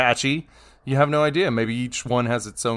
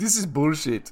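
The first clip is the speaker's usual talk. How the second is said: bad, clumsy, put-on Congolese accent; 4 semitones higher than usual. Imitating listeners in Congo reacting to the podcast: terrible Congo accent. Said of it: "That's a terrible Congo accent".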